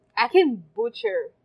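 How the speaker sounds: ordinary delivery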